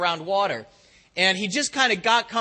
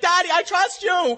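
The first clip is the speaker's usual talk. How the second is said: mock very high, slow, drawn-out, flustered voice; 10 semitones higher, 3 dB louder than usual. Retelling what a son said after being caught in the pool: imitating a flustered son. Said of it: "he's all, you know, flustered".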